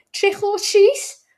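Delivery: put-on childlike light Scouse accent, very high and loud. Retelling trick-or-treating kids at his door, in a little Scouse accent. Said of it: "little Scouse accent".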